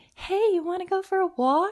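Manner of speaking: play-acted, very high, syrupy sugary-sweet voice. Retelling how they would ask the emotional manifester: imitating a sugary sweet voice. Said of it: "Changing my voice".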